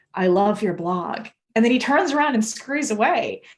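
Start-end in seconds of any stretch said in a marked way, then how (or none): 0.1-1.2 put-on near-whisper. Retelling a stranger leaning over to say something: imitating a near-whisper. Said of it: "almost whispers in my ear".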